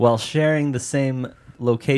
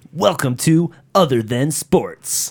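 put-on loud sports-announcer voice; 3 semitones higher, 5 dB louder than usual. Opening the show Other Than Sports in an ESPN sports-announcer voice. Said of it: "should I do it in my ESPN voice?".

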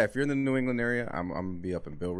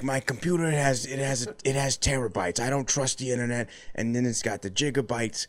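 breathy put-on voice, much higher; 5 semitones higher than usual. Acting out an Adam Sandler character talking to Jay; breathy Adam Sandler character voice. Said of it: "very breathy character".

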